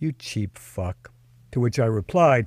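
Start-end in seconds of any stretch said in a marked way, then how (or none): 0.0-1.1 angry, sneering, clunky put-on Russian accent. Retelling the woman's insult after refusing to pay: imitating a not-so-sexy russian accent. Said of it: "in a not-so-sexy accent said".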